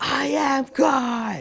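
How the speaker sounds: mock very high movie-style full scream, God drawn out. Retelling how a man screamed at someone: imitating a scream at full volume. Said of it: "at the top of his lungs like a movie".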